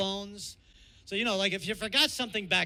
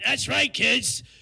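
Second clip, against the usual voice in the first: loud, butched-up, put-on macho tough-guy delivery; 5 semitones higher, 6 dB louder than usual.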